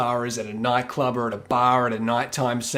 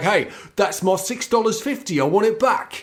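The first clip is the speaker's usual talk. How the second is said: put-on, pitched-up Cockney accent; 8 semitones higher than usual. Acting out someone demanding repayment for a shouted drink, in a Cockney accent. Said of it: "I do like your Cockney accent".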